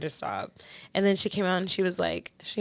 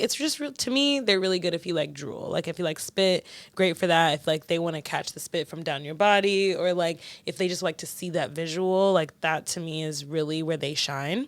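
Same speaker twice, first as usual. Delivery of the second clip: plain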